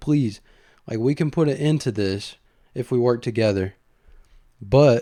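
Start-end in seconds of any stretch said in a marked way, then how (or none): none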